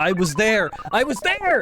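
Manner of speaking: shouting. Streamer insisting to chat that they were there: yelling. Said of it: "Sorry I'm yelling so much".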